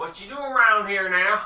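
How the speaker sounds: put-on Texas cowboy accent. A game narrator voicing a man who turns to the newcomers, stereotypical texas cowboy voice. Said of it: "a very stereotypical Texas cowboy".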